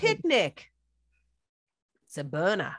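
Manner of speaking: attempted, put-on New Zealand accent. Challenged to do a Kiwi accent, attempting a Kiwi accent. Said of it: "a Kiwi accent. Go".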